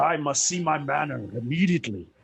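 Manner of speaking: furious, angry winged-beast voice. Recounting a scene where a winged character demands to see his manor, retelling an angry line. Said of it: "And he's just so angry".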